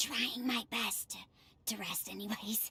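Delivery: hushed whisper. A character on vocal rest, asked why they're whispering, answers, whispering. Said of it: "I'm on vocal rest right now".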